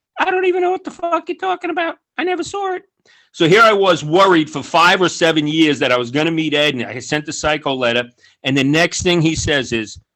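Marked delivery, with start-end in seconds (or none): 0.2-2.9 very high, fast, dismissive high-pitched voice. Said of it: "he's got a high-pitched voice".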